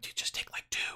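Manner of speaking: very quiet, hushed, breathy urgent whisper. Retelling sneaking sodas from under a man's carport: retelling a whisper. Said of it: "we're whispering like".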